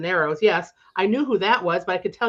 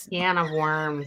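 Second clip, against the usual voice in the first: strong nasal Rochester accent, lower, quieter; 3 semitones lower, 4 dB quieter than usual. On a podcast, saying a phrase in an exaggerated nasal Rochester accent. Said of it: "we just went real nasal Rochester".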